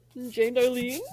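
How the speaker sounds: ordinary talk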